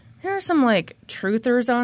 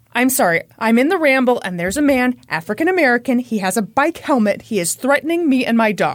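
ordinary talk, nothing marked

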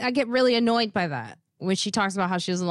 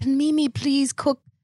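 put-on Irish accent; 3 semitones higher than usual. Speaker quoting a woman who asked for her food, put-on Irish accent. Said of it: "In an Irish accent".

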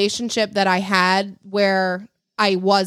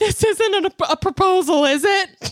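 put-on tearful crying voice, much higher; 11 semitones higher than usual. Speaker recalls being given his grandmother's ring, reenacting asking while crying. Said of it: "and I started crying".

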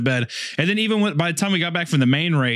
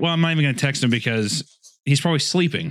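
ordinary delivery

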